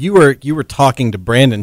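usual speaking voice

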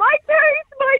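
shrill, very high, loud cry of pain. Retelling how he ran off down the stairs, imitating his screaming. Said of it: "he's screaming".

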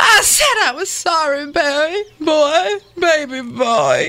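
tearful, pleading voice with Southern accent.

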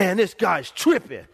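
put-on hot, worked up, annoyed, huffy. Retelling coming home after an argument: imitating own past anger. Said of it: "I would be mad".

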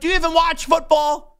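high-pitched yell. Recounting yelling at a caller from boston on the line, retelling a yell. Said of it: "And I'm yelling at him like".

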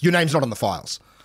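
put-on hostile, unwelcoming, high reply. Retelling how the reception lady answered him: imitating a hostile receptionist. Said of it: "hostility immediately".

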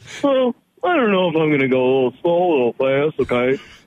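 laid-on put-on Minnesota accent. Mocking drivers from different states, the speaker does Minnesota drivers: Minnesota accent. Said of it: "Who's that accent?".

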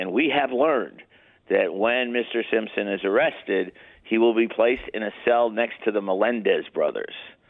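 ordinary talk

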